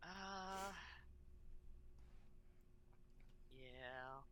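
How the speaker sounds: disappointed, let-down tone. Answering when called on for a turn, sounding disappointed. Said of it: "Don't sound so disappointed about it".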